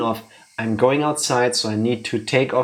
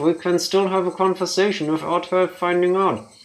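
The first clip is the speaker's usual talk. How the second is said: pitched-up ventriloquist voice, through the teeth, lips still; 6 semitones higher than usual. Joking that a puppeteer is working the arm: ventriloquist voice without moving lips. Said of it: "This is ventriloquism".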